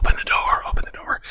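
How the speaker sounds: close-mic whisper with audible breath. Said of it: "the whispering into the microphone".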